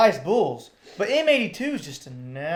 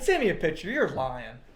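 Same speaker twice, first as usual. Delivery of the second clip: plain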